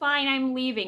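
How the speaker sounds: put-on crying, high, tearful, sulky voice. Retelling a girl leaving the Zoom meeting in tears: imitating someone crying. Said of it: "Annoying starts crying and acting like".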